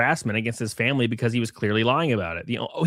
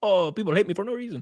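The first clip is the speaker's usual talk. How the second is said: put-on Spanish-sounding accent, quieter; 7 semitones higher, 4 dB quieter than usual.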